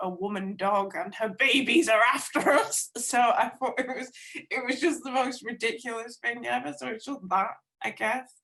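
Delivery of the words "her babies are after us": loud, frightened scream climbing as it goes. Telling how they saw a dog, the speaker imitates Levi screaming. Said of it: "jumped on my back and started screaming".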